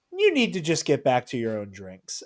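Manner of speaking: play-acted, offhand, easy, casual, sing-song delivery. Retelling how a man gestured a Jedi mind trick, retelling a casual command. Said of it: "very like casually".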